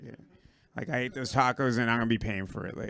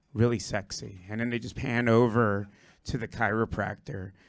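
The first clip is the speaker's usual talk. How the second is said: ordinary talk, nothing marked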